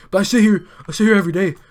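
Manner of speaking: put-on whining tone.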